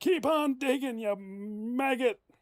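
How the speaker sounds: put-on very high, attempted gruff, harsh old man voice. Playing the grandpa telling someone to keep digging, attempting a harsh grandpa voice. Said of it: "I can't do a harsh grandpa voice".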